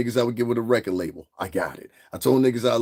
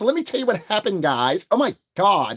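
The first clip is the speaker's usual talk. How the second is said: put-on valley girl accent, swooping high pitch; 9 semitones higher than usual. Mocking the fake accents people put on, in a fake Valley girl accent. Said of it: "you gotta talk like this, like you're in Hidden Valley".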